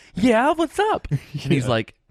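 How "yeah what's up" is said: put-on very high, bouncy, bubbly girl voice. Retelling a girl answering when called over, imitating a bubbly girl. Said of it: "her being all like bubbly".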